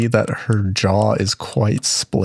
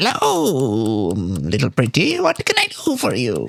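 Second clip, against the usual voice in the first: put-on sing-song old hag voice, drawn-out "hello"; 2 semitones higher than usual. Storyteller voicing the old hag who answers the door, in an old hag voice. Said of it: "this old hag answers the door".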